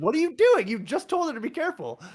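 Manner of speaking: high-pitched, loud, incredulous outburst. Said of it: "And I was like".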